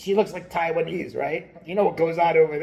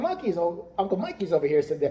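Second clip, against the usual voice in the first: plain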